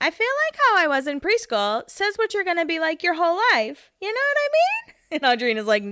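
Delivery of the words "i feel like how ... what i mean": very high voice, pitch swooping and swinging. Retelling what Heidi said about dating, in a Heidi voice. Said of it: "as Heidi does in her Heidi voice".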